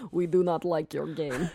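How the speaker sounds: good put-on Russian accent. Telling how Russian dudes showed up at the Infinity Ward offices, Russian accent. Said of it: "That's a pretty good accent".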